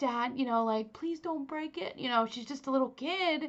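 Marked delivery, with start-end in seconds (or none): 0.0-2.0 mock crying child voice, tearful and pleading. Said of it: "She's crying because she's like".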